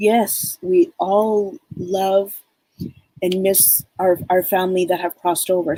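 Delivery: teary, choking-up voice thick with tears. Speaking to listeners about family who have crossed over, getting teary. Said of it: "now I'm I'm getting all teary".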